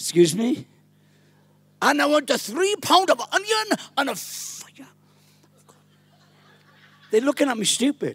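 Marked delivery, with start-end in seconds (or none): 1.8-4.9 fake German accent, pitched up. Retelling own past shopping in a village store: imitating own German accent. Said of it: "I started to develop a German accent".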